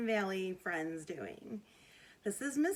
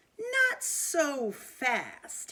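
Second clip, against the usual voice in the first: loud, nasty, unpleasant hissing voice; 5 semitones higher, 5 dB louder than usual. Reading a picture book aloud, a strict new teacher stops the kids: hissing unpleasant voice. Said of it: "hissed an unpleasant voice".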